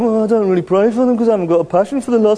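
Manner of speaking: slight put-on Birmingham accent. Speaker voices an imagined listener's excuse, with a slight Birmingham accent. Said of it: "That sounds a bit like a Birmingham accent".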